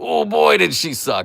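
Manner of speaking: very high, creaky put-on British grandma voice. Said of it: "you sound like a British grandma".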